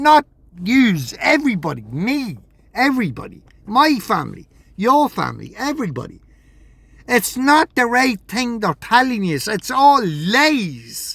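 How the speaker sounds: heated, worked-up, swooping high, "lies" drawn out. Addressing the guys directly, getting worked up. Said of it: "I'm getting a bit worked up there".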